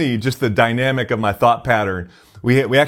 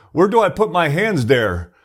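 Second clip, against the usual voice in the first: put-on French Canadian accent, pitched up; 5 semitones higher than usual. Retelling what a man asked before his bench press, in French Canadian accent. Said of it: "he says in this French Canadian accent".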